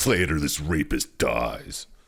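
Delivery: threatening horror villain voice. Speaking to the others while they play the game: Jigsaw voice. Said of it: "You do not have a bad Jigsaw voice".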